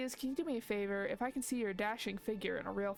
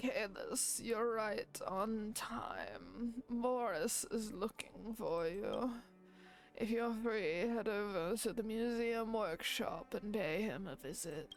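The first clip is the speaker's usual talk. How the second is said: put-on old man voice. Reading a character's lines aloud, Ul'dan old man voice. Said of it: "gotta put on the old man voice".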